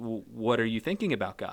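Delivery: surprised asking tone. Retelling a babysitter's question to a staring boy: imitating a surprised question. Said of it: "kind of in surprise".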